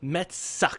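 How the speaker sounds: deadpan, totally serious, flat. Retelling what an old lady said at a pizzeria: imitating a dead serious old lady. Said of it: "with a dead serious face".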